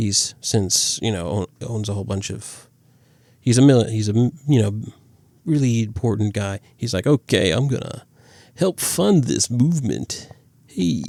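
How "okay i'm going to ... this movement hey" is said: put-on cool greaser voice, pitched higher. Summarizing a plot, voicing an important rich character's line: sounding like the Fonz. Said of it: "I made him sound like the Fonz".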